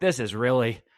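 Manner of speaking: plain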